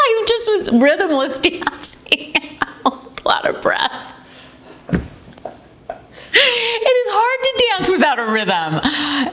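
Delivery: high, slow, breathless, winded laughing talk.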